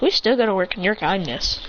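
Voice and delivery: ordinary delivery, nothing marked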